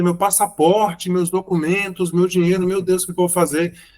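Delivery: acted-out frantic, desperate, panicked, despairing lament. Retelling how a woman left her bag on a train, acting out her desperation. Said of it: "E aí ela ficou desesperada".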